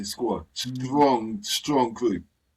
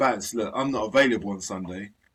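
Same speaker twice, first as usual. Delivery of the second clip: usual speaking voice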